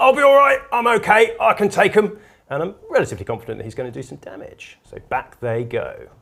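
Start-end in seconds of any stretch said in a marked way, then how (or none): 0.0-2.2 high-pitched shouting in a character voice. Voicing a game figure who yells while falling back: character yelling. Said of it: "the Kelemorph has just yelled".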